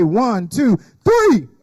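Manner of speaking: count building up, "three" shouted loudly.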